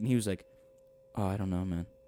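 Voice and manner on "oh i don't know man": hushed, very quiet, low-key, barely there. Retelling his reply when asked about the seat: imitating someone speaking really quietly. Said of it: "Like, really quietly".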